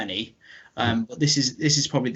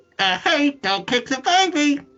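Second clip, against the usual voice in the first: put-on childlike voice, pitched much higher; 13 semitones higher than usual. Asked to say the line in the high register, in a kid's voice. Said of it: "I'll do in my kid's voice".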